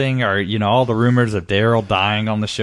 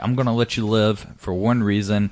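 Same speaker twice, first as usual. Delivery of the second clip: usual speaking voice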